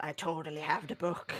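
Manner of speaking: secret, hushed half-whisper, very quiet, barely audible. Half-whispering to Rill in character during the game: half-whispering. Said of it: "I'm whispering to Rill".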